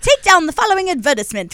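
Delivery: very high-pitched British English voice. Quoting a child's Mary Poppins line: British accent. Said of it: "talking in a British accent all day".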